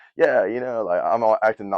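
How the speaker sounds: ordinary delivery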